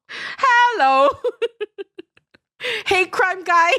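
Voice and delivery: very high put-on Malaysian Chinese accent, "hello" stretched. Just told you must do the accent too, try an Uncle Roger accent. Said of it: "have to do Uncle Roger accent?".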